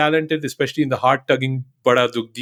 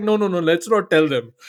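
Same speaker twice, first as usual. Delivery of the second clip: ordinary delivery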